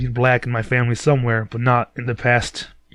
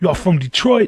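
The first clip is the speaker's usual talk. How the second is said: put-on high, laid-on, full-on New York accent; 6 semitones higher than usual. Retelling a stranger's question after spotting his Detroit hat: imitating a New York accent. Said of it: "Fucking total New York accent".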